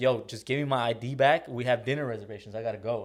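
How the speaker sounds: ordinary talk, nothing marked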